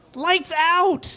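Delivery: small, faint, squeaky, high-pitched calling voice. Telling the players what they hear, a voice calls out in a faint, squeaky voice. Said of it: "a faint, squeaky voice uh, call out".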